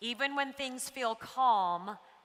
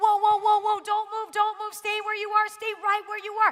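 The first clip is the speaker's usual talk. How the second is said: shrill, very high yelling; 10 semitones higher, 8 dB louder than usual. Retelling how a National Geographic video guy yelled to them, imitating a man yelling. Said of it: "He just yelled".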